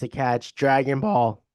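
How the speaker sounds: voice breaking and cracking. Recalling a childhood memory, voice cracking. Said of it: "my voice just cracked".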